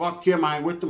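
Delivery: ordinary delivery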